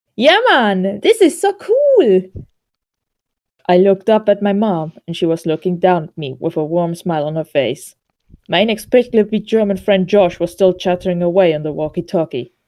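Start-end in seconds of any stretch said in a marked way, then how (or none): 0.2-2.2 put-on Jamaican-sounding accent, very high and swooping. Voicing the friend Josh over a walkie-talkie in a story, Josh voice, Jamaican-sounding. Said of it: "he sounds more uh, Jamaican".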